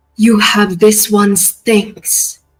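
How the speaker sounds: deep metallic, almost unfeminine voice. Voicing a towering being addressing a mortal: metallic deep voice. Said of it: "her metallic, deep voice, almost not feminine".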